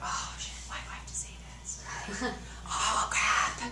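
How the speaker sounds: soft, whispered, panicked voice.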